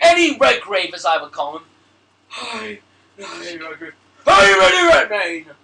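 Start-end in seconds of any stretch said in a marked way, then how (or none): 2.3-5.4 slow, drawn-out, strained, constipated-sounding voice. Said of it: "You sounded like you were constipated for a minute".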